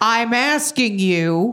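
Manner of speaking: put-on sassy fish voice with attitude. Answering what the game fish sounds like: imitating the fish with attitude. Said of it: "it's got a fucking attitude".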